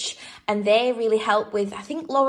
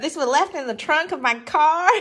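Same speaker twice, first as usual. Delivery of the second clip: terrible put-on American accent, pitched up; 6 semitones higher than usual. After talking about American road trips, a line in a terrible American accent. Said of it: "That's the shittest American accent ever".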